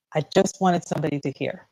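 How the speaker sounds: ordinary talk, nothing marked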